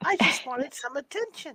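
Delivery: very high, breathy, whispered tiny fairy voice. Retelling a voice caught on an EVP recording, very high-pitched fairy voice. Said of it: "In this very high pitched fairy voice".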